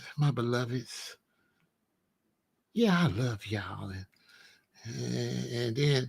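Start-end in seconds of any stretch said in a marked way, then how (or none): 0.2-3.9 put-on soft speaker's voice, lower and quieter. Imitating Farrakhan addressing his listeners: Farrakhan talking all soft. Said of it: "be talking all soft".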